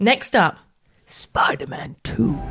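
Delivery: movie-style announcer voice. Announcing the next game title: cinematic voice. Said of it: "I tried doing it in my, like, cinematic voice".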